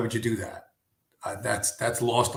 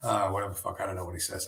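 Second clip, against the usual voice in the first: ordinary delivery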